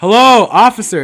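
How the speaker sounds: shrill, very loud, high-pitched yell. Retelling how someone called up over a mall railing to an officer: imitating someone yelling. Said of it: "he yells".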